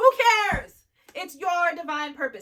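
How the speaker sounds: very loud, high, impassioned yelling. Speaker urging listeners not to limit themselves, yelling. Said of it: "I'm so sorry for yelling".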